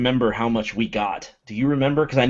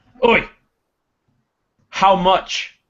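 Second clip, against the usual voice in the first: sudden, high, piping interjection; 8 semitones higher, 3 dB louder than usual. Voicing Durgan piping up to interrupt: piping up in character as Durgan. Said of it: "he would pipe up, and he'd say".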